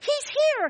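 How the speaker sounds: acted, very high, loud, delighted cry. Retelling waiting children when the doorbell rings: imitating joyful cries. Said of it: "cries of".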